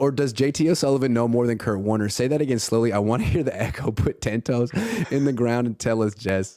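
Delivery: ordinary delivery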